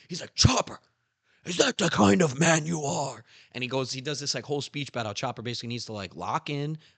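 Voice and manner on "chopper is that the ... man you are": put-on loud, high-pitched scolding shout. Retelling a scene where Zoro yells at Chopper: imitating Zoro yelling. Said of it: "Zoro fucking starts yelling at him".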